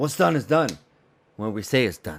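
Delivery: dramatic, action-movie style line reading. Trying a quote from Mission Impossible as a Tom Cruise impression. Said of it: "take a little shot at this Tom Cruise thing".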